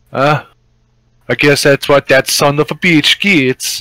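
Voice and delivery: put-on Scandinavian accent. During a tabletop game, the narrator speaks as a character in Gur's Scandinavian accent. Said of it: "I'm trying my best with the accent".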